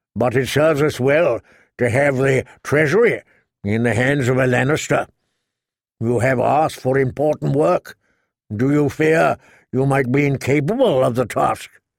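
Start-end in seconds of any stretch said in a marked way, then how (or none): none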